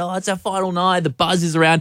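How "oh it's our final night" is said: high, soft, gushing with excitement. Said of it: "Everyone's so excited".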